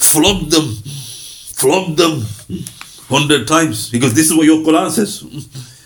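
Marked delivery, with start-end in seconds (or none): 0.0-3.9 words laced with venom. Mocking how others quote the flogging verse, imitating their venomous delivery. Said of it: "they say it with venom".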